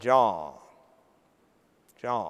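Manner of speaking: strong Southern drawl, low and drawn out.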